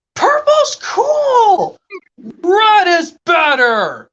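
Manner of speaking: put-on shouting. Acting out two characters arguing over colors: acted yelling in an argument. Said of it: "What are you yelling about?".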